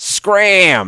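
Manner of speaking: very high, loud, drawn-out "scram". Asked which Muppet voice he can do, the speaker answers with an Oscar the Grouch voice. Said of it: "That's Oscar the Grouch".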